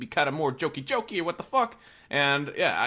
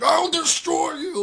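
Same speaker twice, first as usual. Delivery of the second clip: very high, roaring yell, pitched way up; 12 semitones higher, 3 dB louder than usual. Imagining a crossover fight scene: imitating Wilson Fisk yelling. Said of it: "he'd be yelling and shit as he does".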